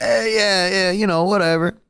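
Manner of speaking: super chill, loose, easygoing talk. Retelling how an actor played a villain: super chill Ben Mendelsohn impression. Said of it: "he was super chill. He was like".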